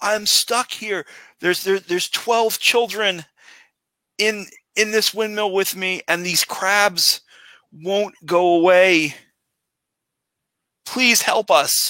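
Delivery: very high, loud shouting. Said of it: "looks out and shouts".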